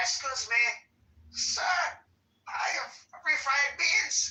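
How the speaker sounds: fake Spanish-speaker accent.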